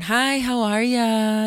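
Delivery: put-on honeyed, flirty voice, very slow and drawn out. Recalling hearing him answer the phone, imitating Michael, mock-sweet and flirty. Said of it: "all sweet, all flirty, all sweet".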